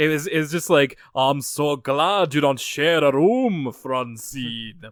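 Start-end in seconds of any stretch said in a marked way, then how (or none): 1.1-4.8 put-on Transylvania-style accent. Speaker quotes a cartoon character's line, Transylvanian accent. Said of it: "it has like a Transylvanian accent".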